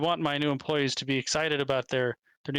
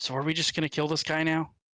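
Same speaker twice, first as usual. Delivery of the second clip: secretive, hushed stage half-whisper. Half-whispering in character to the armor, asking about a plan: half-whispering. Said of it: "I'm gonna whisper to the armor".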